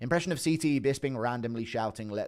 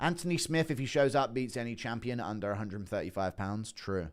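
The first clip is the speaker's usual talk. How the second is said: ordinary talk, nothing marked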